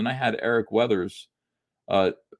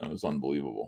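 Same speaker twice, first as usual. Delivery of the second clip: ordinary delivery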